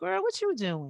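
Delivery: gentler, soft voice with a slight country accent. Showing how the speaker sometimes talks, a little softer, more country. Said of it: "a little softer, a little more country".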